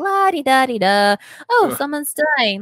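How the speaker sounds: put-on nonchalant voice. Retelling a character's reaction to someone dying: imitating someone nonchalant. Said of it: "all nonchalant".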